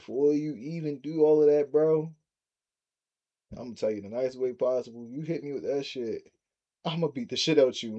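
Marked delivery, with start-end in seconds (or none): none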